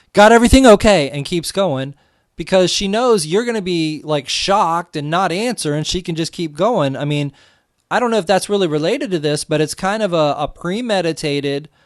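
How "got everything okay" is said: very loud, high, careless passing shout. Describing a waitress who walks past tables, imitating a waitress shouting. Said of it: "she just walks by you and shouts".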